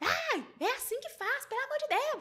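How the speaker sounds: put-on high outburst. Retelling a quarrel with a housemate about chores: imitating herself raising her voice. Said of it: "levantei a voz pra ela e falei".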